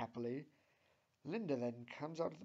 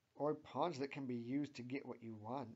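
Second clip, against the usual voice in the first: plain reading voice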